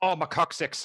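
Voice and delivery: bad put-on Irish accent. Retelling what a man screamed after slipping on ice, in a really bad Irish accent. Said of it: "in a really bad Irish accent".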